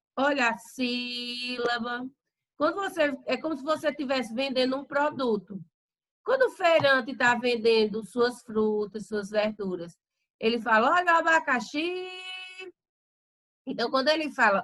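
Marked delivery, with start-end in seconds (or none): 11.0-12.1 abacaxi, final syllable xi stressed and punched. Like a market vendor selling fruit, calling out abacaxi: stress on xi. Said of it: "o xi, ele teve mais tonicidade, ele teve mais força".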